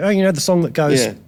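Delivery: ordinary talk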